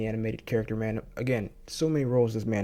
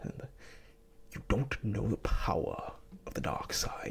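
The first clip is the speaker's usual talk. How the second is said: terrible hushed, breathy villain voice, breathed out; 8 dB quieter than usual. Talking about knowing Darth Vader's voice early on, terrible Darth Vader impression. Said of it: "I'm doing a terrible, terrible impression".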